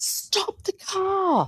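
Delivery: very high, shrill, full-throated top-of-lungs scream. Retelling a friend's shout in the car, imitating a top-of-lungs scream. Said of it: "screamed at the top of her lungs".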